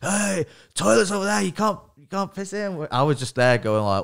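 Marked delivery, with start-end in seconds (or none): 0.0-2.9 acted, raised, high-pitched shout. Retelling a security guard telling them off: imitating a guard shouting.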